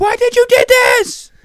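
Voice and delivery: high, loud, slow crying scream, shrieking. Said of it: "they're on the phone screaming at him".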